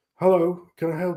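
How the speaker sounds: recorded, automated answering-machine style voice. Retelling a call to a police station: imitating an answering machine. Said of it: "fucking answering phone machine".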